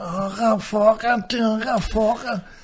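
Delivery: put-on very high, very slow, slurred Belfast accent. Mocking how everybody with that accent talks, imitating a slurred accent. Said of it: "like everybody had a stroke and they were like".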